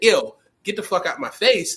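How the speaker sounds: ordinary delivery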